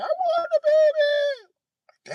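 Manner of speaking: sobbing, very high, very slow, drawn-out wail. Telling a story about mama breaking down over the baby, imitating someone crying. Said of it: "Mama broke down crying like".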